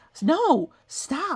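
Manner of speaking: ordinary talk, nothing marked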